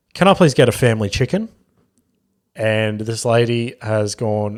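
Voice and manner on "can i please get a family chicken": bold, confident, self-assured tone. Retelling ordering at a drive-through speaker: imitating a confident order. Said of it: "as confidently as you can possibly say it".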